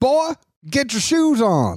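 thick country Georgia drawl, very high and swooping. Imitating a father yelling at his kids: imitating a thick Georgia accent. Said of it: "he just goes full Georgia".

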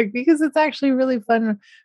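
high voice with laughing smile.

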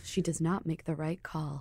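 exaggerated, over-the-top narrator voice. Answering Garrett's prediction, in an extreme narrator voice. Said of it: "Extremely, extremely narrator voice".

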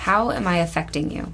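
ordinary talk

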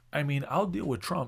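put-on secretive hushed tone. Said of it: "in that tone".

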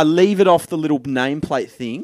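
ordinary talk

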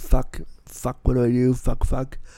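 mock muttered swearing under the breath. Retelling wheeling home after the policeman's remark, retelling muttered swearing. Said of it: "I started saying "fuck you" like under my breath".

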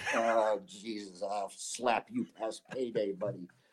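very slow, stretched, drawn-out dad voice. Retelling his father's threatening reply on the phone: imitating his father. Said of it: "my father's there with his pants up to his neck going".

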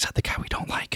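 put-on audible whisper. Speaker retells an engineer leaning over to another engineer; retelling a loud stage whisper. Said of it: "she whispered, she didn't really whisper because the whole room heard it".

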